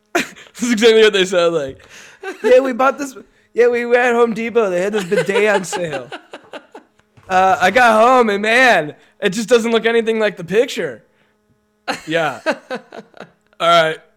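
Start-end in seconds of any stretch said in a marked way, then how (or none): 2.5-11.1 put-on Chicago dude voice.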